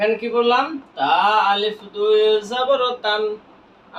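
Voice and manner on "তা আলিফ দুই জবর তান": slow, drawn-out spelling of each letter. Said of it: "আমরা বানান করলাম".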